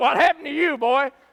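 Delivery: put-on laughing voice. Acting out an imagined scene of God asking the devil what happened: acting God laughing. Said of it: "God's gonna laugh and say".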